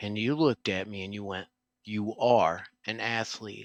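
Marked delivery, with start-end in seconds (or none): 1.8-3.7 firm, resolute delivery. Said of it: "you said it in such a way".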